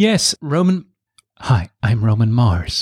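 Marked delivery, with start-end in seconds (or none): 1.4-2.8 slow, deliberate podcast-host voice. Answering a question about a podcast company with a Roman Mars impersonation. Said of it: "That's my Roman Mars impersonation".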